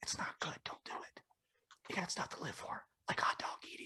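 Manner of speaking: quiet mock ASMR whisper. Imitating people who whisper on videos to soothe listeners: imitating an ASMR whisper. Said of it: "You sound like [name]".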